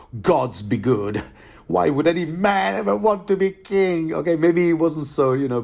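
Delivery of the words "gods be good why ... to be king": put-on whiny moan. A self-confessed bad actor performing a character's line, whiny and moaning. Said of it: "bitchy and moany".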